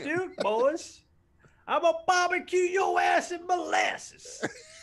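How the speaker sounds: very high, slow southern drawl. Imagining how a man would say it: real southern redneck voice. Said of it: "like a real southern redneck".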